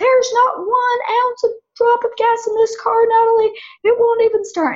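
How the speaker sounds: mock, very high-pitched, shrill screaming outburst. A woman retells what her husband screamed when she came home, imitating him screaming. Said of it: "my husband started screaming".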